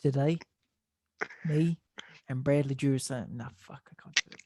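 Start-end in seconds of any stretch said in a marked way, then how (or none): 0.0-3.3 attempted Australian accent. Performing a short bit in an attempted aussie accent. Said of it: "It's like you're trying to do an Aussie accent".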